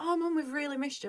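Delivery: play-acted high, eager, genuinely enthusiastic child voice. Retelling the kids coming back and greeting mum: imitating enthusiastic kids. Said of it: "they were enthusiastic".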